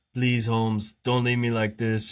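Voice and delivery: imploring, pleading tone, in character. Retelling a movie scene where a character lies practically dying: imitating Danny Trejo's plea. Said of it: "just the way he says".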